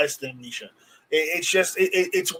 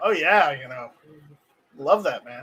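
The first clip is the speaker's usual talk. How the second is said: sarcastic mock enthusiasm, quieter; 3 semitones lower, 4 dB quieter than usual. Reacting to trading a house for pistol primers: sarcastic. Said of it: "I'm being sarcastic".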